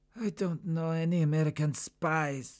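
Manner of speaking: slow, high moan, pained. A chained prisoner answers his interrogator's question, moaning in pain. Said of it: "he moaned".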